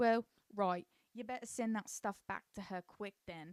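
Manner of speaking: put-on British accent. Recounting a scene, voicing a woman's reply to a man, in a british accent. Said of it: "I don't know why I keep doing that accent".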